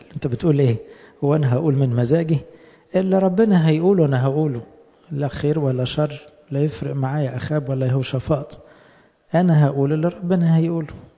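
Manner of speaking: ordinary delivery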